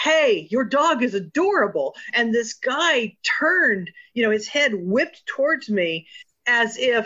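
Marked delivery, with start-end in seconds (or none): 0.0-1.9 yell, called out easy and light. Retelling calling out from a car window to a dog walker: retelling a yell. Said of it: "I yelled".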